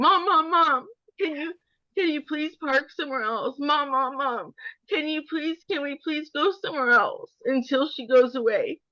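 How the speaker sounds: high, tearful, shaking voice, crying. Retelling how the scared son begged to park elsewhere: imitating a crying son pleading. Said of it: "shaking, crying".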